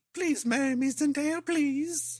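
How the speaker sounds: put-on British child voice. Imitating the actor proposing to Zendaya: imitating Tom Holland as a British orphan. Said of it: "Just sounding like that?".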